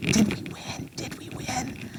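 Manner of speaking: soft whisper, under the breath.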